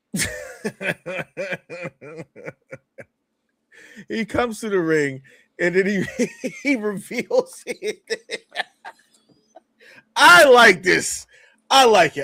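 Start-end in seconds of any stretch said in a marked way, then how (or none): 10.1-12.2 excited outburst. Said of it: "I'm sorry".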